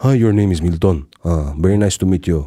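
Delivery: low, deep-voiced, polite male voice. Describing Filipino guys the speaker has met, imitating a deep-voiced Filipino guy. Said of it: "Filipino guys who have deep voices".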